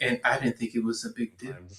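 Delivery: put-on deadpan delivery. Retelling what Katie said in reply to Josh, imitating Katie's deadpan.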